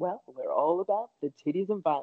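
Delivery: cultured, resonant, rich, well-educated professorial lecturer voice. Imitating a professor's well-educated sounding voice saying a crude slogan. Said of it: "just that resonance and tone in their voice be like".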